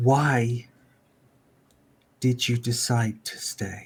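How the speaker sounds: quiet voice with simmering, held-back anger. Retelling a conversation, voicing a woman chipping in, in a quiet, angry voice. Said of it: "says in a quiet, kind of uh, angry voice".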